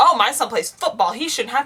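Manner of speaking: mock indignant, tantrum-like complaining voice. Retelling a parent's complaint about school fees: imitating a parent throwing a fit. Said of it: "they threw a fit because".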